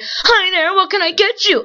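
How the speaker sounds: blaring, full-volume, high voice. Retelling how the woman taking a car order sounded, imitating a very loud voice. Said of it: "the fucking loudest thing ever".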